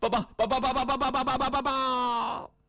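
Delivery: stuttering repeatedly on 报. In a comic story, a messenger tries to deliver his report: stuttering messenger. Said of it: "怎么不结巴了".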